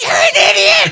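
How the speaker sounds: piercing yell, very high and very loud. Retelling how she yelled out the window at him, retelling a yelled insult. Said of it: "she just yells out the window".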